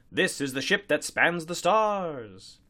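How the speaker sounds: triumphant broadcast-style proclamation, "stars" drawn out. A commentator's voice from a screen makes an announcement, triumphant. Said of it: "said triumphantly and inaccurately".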